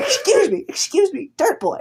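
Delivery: very high, swooping, slow sing-song drawl. Imagining being interviewed by Nardwuar: Nardwuar impression. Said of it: "he calls you dirt boy".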